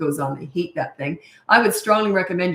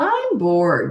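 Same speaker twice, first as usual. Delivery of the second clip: put-on snotty, cheeky bratty child voice. Retelling a young son coming home and complaining: imitating a snotty tone. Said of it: "in that snotty tone".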